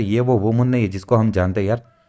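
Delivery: ordinary delivery, nothing marked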